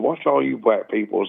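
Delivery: ordinary delivery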